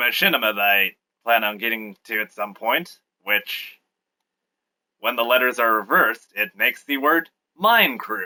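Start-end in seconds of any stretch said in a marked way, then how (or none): 6.3-8.3 patronising, condescending, over-explaining, talking-down delivery. Explaining a machinima's odd name, condescending tone. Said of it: "That sounded more condescending than I intended it to".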